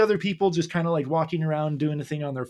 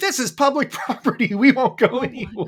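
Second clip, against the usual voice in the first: angry, snapping, pitched-up tone; 8 semitones higher, 3 dB louder than usual. Retelling what the tourists told the people in tents: imitating angry people.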